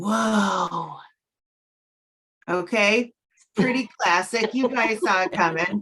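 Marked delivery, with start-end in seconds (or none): 0.0-1.0 whoa stretched out long. Doing an impression of a young Keanu Reeves: young Keanu Reeves impression. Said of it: "this is my impression of a young Keanu Reeves".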